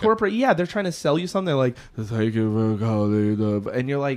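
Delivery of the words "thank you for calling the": low, flat, passionless, scripted call-centre monotone drone. Retelling a telemarketer's sales call: imitating a droning telemarketer. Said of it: "you have zero passion about what you're selling".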